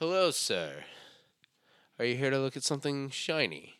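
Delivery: put-on salesman voice, British-sounding accent. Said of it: "why did you sound like British?".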